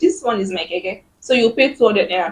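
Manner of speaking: normal talking voice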